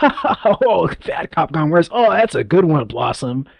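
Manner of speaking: put-on sarcastic laugh. Imitating a show narrator laughing at a joke: imitating a sarcastic obnoxious laugh. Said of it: "laughing always seemed kind of sarcastic".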